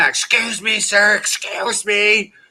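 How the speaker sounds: mock very slow, insistent, high, drawn-out scream. Retelling a nurse trying to get a patient's attention: imitating someone screaming. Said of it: "she's screaming".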